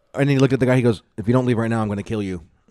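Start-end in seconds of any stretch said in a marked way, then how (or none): 1.2-2.5 mock stoic deadpan menacing tone. Imitating a stoic character threatening someone: imitating a stoic deadpan threat. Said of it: "his facial expression did not change whatsoever".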